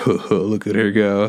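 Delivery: slow, chuckling, laughing delivery. Retelling how dad laughed at mom: imitating dad laughing. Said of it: "And my dad just, like, laughing".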